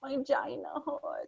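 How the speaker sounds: put-on soft, tiny little toddler voice. Retelling what a two-year-old girl said coming out of the pool, little toddler voice. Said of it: "In her little voice".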